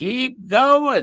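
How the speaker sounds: very high, shrill witch-like screech. Retelling how she urged you on when everybody else wanted to stop, imitate her screechy, witchy voice. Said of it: "with that screechy, witchy voice of hers".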